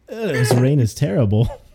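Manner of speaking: usual speaking voice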